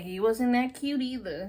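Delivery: ordinary delivery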